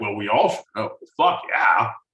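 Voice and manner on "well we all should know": casual, unbothered, nonchalant, offhand tone. Mocking how the other speaker stated a date: imitating John's nonchalant delivery. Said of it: "you sound so nonchalant and delivery. It's like".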